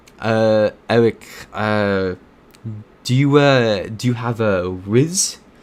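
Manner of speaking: heavy, very strong, very slow put-on French accent. Retelling a French guy asking the speaker's friend a question, in a very strong French accent. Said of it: "He had a very strong French accent".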